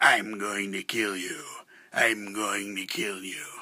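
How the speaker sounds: creepy, strange, scary put-on voice. Telling a story, voicing a guy who threatens the girl, in a weird scary put-on voice. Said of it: "I'm using a weird voice, so it's more scary".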